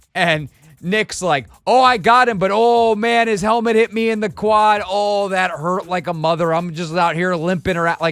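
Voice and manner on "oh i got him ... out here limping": put-on Chicago accent. Retelling a player's remark about a hit after a play: imitating a Chicago accent. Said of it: "in his Chicago accent".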